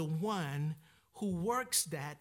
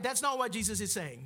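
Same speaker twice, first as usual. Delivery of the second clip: ordinary talk, nothing marked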